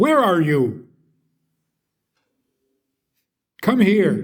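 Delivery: slow, rude, bossy, angry, disrespectful tone. Showing how not to speak to one's wife: disrespectful angry tone. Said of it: "especially if you add a little anger to it".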